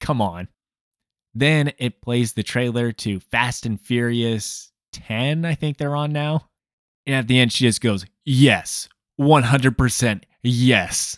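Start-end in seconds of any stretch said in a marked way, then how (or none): 8.2-11.2 put-on voice of a woman. Retelling what a woman said at a movie trailer's end, imitating her in a deeper voice. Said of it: "I'm deepening my voice when I'm imitating her".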